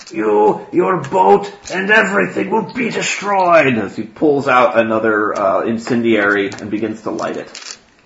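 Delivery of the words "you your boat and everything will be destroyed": very high-pitched, threatening in-character shouting. Voicing an opponent threatening to destroy the boat: yelling in character. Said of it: "he yells".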